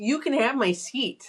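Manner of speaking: irritated, pointed, acted out. Retelling how a lady on the train repeated her offer: imitating an annoyed woman. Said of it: "she was mad at me".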